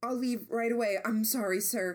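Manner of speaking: terrified, frightened, scared stiff voice. Reading a story aloud, a character apologizing and promising to leave: terrified. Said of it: "sounding terrified".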